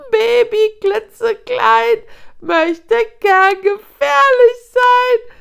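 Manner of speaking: shrill, very high, very loud mocking shriek. The hyena with the tattered ear speaks to Nuru as the pack circles; shrieked. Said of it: "kreischte die mit dem zerfledderten Ohr".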